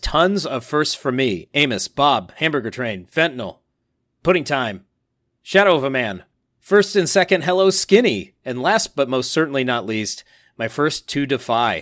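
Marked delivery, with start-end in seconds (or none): none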